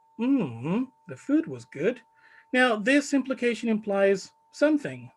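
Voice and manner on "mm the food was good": tune falls then rises on the word good. Showing learners an implication in a reply: fall-rise tone. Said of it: "So it's something like".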